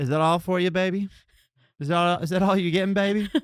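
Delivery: put-on Southern old-lady accent. Talking about Southern accents, imitating the old lady at the 7-Eleven in a Southern accent. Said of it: "The li- old lady at seven eleven".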